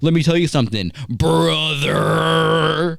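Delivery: slow, high, creaky, hoarse, drawn-out rough croak. Retelling how Kevin Nash mocked Hulk Hogan's lost voice. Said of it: "making fun of Hogan having no voice".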